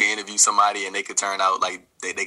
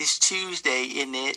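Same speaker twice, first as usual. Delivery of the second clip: put-on British accent, pitched up, slow and drawn out; 6 semitones higher than usual. Asked in a group to try a British impression: British accent impression. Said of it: "I thought you were Davey for a second".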